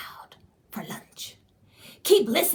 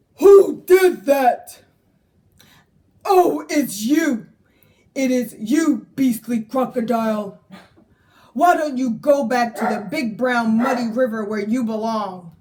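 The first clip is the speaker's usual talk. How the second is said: big, loud, booming storybook character voice; 3 semitones higher, 8 dB louder than usual. Reading a story aloud as Trunky confronts the crocodile, Trunky's big deep voice. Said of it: "said Trunky in his big, deep voice".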